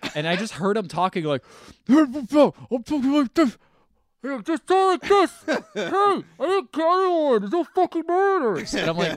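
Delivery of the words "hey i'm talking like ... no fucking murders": odd, very high-pitched, loud squeaking voice. Retelling how a man in a mask sounded talking, weird masked-man voice. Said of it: "why does he sound weird?".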